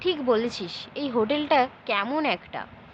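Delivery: ordinary delivery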